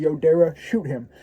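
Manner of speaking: ordinary delivery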